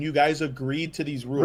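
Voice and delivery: normal talking voice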